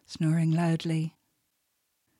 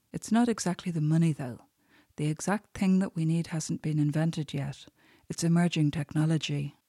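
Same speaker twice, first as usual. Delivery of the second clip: plain reading voice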